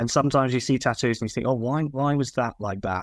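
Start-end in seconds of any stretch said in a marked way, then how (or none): none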